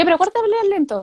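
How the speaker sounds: rushed, super fast speech. Quoting parents who tell a child to talk slowly: very fast speech. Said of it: "se lo dicen así, aparte, súper rápido".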